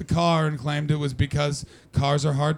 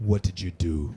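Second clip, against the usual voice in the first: put-on tough, harsh voice with Polish or Irish accent; 9 semitones lower, 3 dB quieter than usual. Retelling what an emergency room nurse said: imitating a nurse with a harsh accent. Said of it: "a harsh one, like Polish or Irish".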